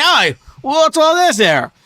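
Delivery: put-on goblin voice. Voicing two goblins who poke their heads up from behind a wall, in a goblin accent. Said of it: "No English accents for the goblins".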